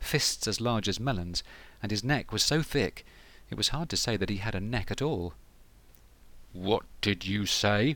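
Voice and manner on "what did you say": slow, menacing, threatening growl. A narrator reads the captain's reply to the brothers, menacing growl. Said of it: "he growled menacingly".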